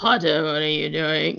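very low, deep voice spoken through the nose. Imitating how a Snape line sounds when reading the book: nasal Alan Rickman voice. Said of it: "in his, like, nasally tone".

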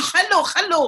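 strong, put-on, mock Spanish accent. Speaker imitates how spanish speakers say hello, in a strong mock spanish accent. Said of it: "Why is the Spanish going".

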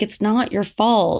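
normal talking voice

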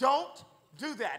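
mock stern fatherly tone, firm, from the chest. Retelling a warning to a man not to touch something, in a dad tone. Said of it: "I used the I used dad, dad tone. You know, I said it with my chest".

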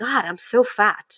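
put-on very slow, drawn-out disgusted voice. Retelling looking in the mirror after showering: retelling own disgusted remark. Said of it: "I said that with disgust".

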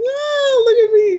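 very high, sickeningly happy, drawn-out voice. Discussing casting, the speaker demonstrates the voice an actress could do: overly happy, high-pitched. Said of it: "like this sort of high-pitched".

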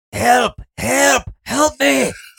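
mock, put-on yelling. Telling how they reacted to ball bearings on the floor: retelling a yell for help. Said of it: "And I just start yelling".

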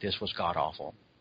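very quiet, very low under-breath mutter. Recounting someone's verdict, the speaker retells it said under her breath. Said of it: "she said it kind of under her breath just so I could hear".

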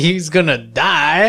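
emphatic, stressed delivery. Imitating another speaker's emphatic way of saying it: imitating an emphatic delivery. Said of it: "He's like".

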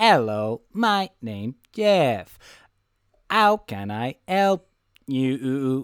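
machine-like AI voice. Describing an AI character in a movie, quoting it in Jeff's robotic AI voice. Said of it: "Jeff's voice is very AI and robotic".

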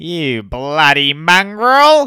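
belted out high and loud. Retelling a comedian's play bit: imitating Shane Matheson. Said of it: "the whole time he just goes".

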